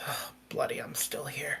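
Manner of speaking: hushed, whispered muttering to oneself under breath. The narrator tells the players they hear Abernath: muttering under his breath. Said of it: "you hear Abernath mutter under his breath".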